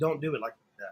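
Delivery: hushed, very quiet half-whisper, close to ear. Retelling how an instructor leaned in and half-whispered a warning: imitating a half-whisper. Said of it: "he whispered it to me".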